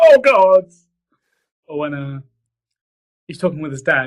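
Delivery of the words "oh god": mock very high, loud, tearful sobbing wail. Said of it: "And they start crying, like".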